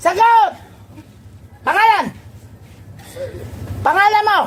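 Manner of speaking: harsh, high, sharp, demanding barked shouts.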